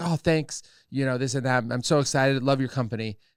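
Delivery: plain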